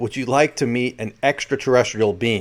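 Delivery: ordinary delivery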